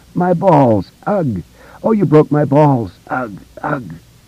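groaning in pain. Narrating a story, a hurt man rolling on the ground speaks, moaning in pain. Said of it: "Henry moaned".

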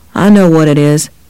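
plain

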